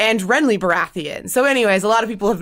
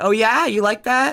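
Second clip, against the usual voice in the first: put-on smug tone; 3 semitones higher than usual. Imitating a man meeting someone he is working against: imitating a smug tone. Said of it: "he looked kinda smug".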